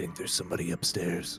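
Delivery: whispering. Voicing a character who hears a creak above: whisper. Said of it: "and whisper".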